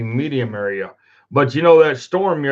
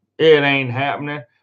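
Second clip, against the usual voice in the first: ordinary delivery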